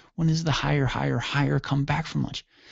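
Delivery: ordinary delivery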